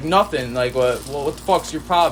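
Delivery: normal talking voice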